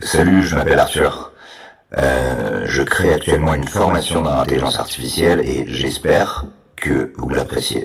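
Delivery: very deep, creepy generated voice. Demoing a voice generator with a preset voice: Martin Dupont voice, very deep, creepy. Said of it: "qui a une voix bien grave, bien flippante".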